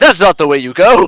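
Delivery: very loud, high, scolding yell. Imagining the god Azuth yelling at the players: imitating a god yelling. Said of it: "yelling at us, like".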